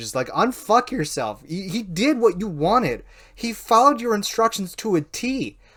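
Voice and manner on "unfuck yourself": acted sudden screaming. Retelling pulling up beside a rider with no helmet: imitating own scream. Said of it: "and I just screamed".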